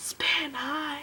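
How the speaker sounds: whispered voice. Recalling greeting spin by his car, retelling a whispered greeting. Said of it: "Like we whispered it".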